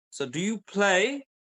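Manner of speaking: intonation climbing upward on play. Teaching pronunciation, the speaker models a question, rising question intonation. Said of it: "then my voice goes up".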